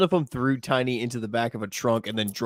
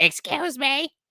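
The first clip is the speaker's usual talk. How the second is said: very high, clumsy, badly done put-on mother voice. Imitating a friend's mother cutting in from the background: bad impression of a friend's mother. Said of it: "that was really shitty impression of your mother".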